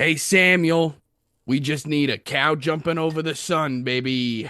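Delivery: loud yelling. Voicing Rose calling an order through the kitchen window: yelling to the cook. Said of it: "Rose looks through the window and just yells".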